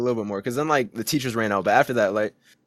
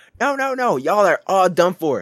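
mock screaming, higher and slower; 7 semitones higher, 4 dB louder than usual. Retelling how a teacher broke up a fight, imitating her screaming. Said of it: "She's like screaming".

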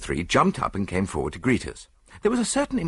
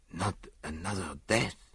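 breathed out, much quieter; 8 dB quieter than usual. Poirot reacts to news that an unforeseen event occurred, breathed. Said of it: "he breathed".

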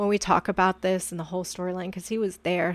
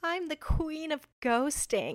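mock proud, high, soft, boastful, through laughter; 8 semitones higher, 5 dB quieter than usual. Retelling what a woman said about standing someone up, mock-proud, laughing. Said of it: "started laughing and going and saying something really proudly".

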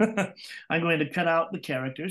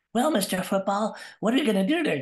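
put-on own voice, still childlike, a bit higher; 5 semitones higher, 4 dB louder than usual. Retelling taping himself as a child interviewing his toys, in his normal voice. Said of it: "I do my normal voice".

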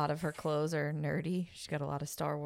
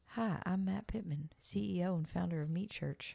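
calming, soothing, calm host voice; 3 semitones higher than usual. Quoting an online cooking host's intro: Matt Pittman soothing voice. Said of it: "Matt Pittman has the most, like, soothing".

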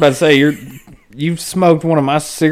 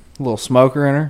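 ordinary talk, nothing marked

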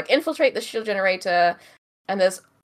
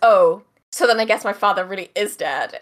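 put-on sassy voice. Retelling a film scene where Luke sasses Vader: imitating Luke's sassy tone. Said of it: "sasses Vader".

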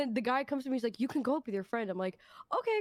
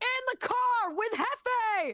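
put-on scream, higher pitch; 10 semitones higher than usual. Retelling a friend's answer on FaceTime: imitating someone screaming. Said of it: "why are you screaming?".

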